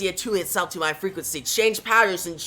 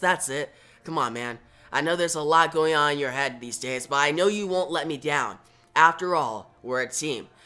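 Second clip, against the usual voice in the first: plain reading voice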